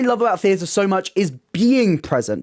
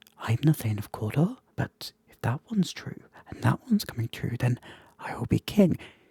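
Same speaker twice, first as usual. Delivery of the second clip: the tiniest, breathy little whisper; 8 semitones lower, 9 dB quieter than usual. Imitating an actor's monologue as heard through headphones: imitating David Tennant's tiny whisper. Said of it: "he whispers them in, like, the tiniest little whisper".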